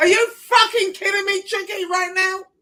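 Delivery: furious, angry outburst, high and loud yell. Speaking about someone who won't show up: yelling angrily. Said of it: "the more you yell at him".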